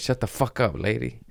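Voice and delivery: angry, harsh, aggressive delivery. Retelling a reply to a heckling drunk lady: imitating an aggressive retort. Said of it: "I didn't say it with that much aggression".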